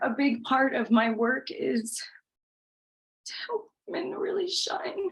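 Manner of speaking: on the verge of crying. Speaker talking about their life and work while holding back tears: tearful. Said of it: "Sorry to make you cry".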